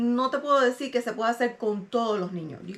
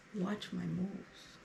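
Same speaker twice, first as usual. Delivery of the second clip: put-on mutter, lower and quieter; 3 semitones lower, 13 dB quieter than usual. Retelling what someone said nearby: imitating someone muttering under his breath. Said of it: "I hear him under his breath going".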